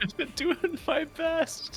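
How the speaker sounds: tearful crying, very high, very slow, drawn-out. Answering a crewmate's teasing about manning the guns, crying in character. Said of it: "Are you crying on the intercom?".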